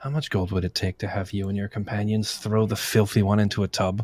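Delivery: low, hushed half-whisper under the breath. Playing a character leaning close to a guard to offer gold, half-whispering under breath. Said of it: "just kind of whisper under my breath".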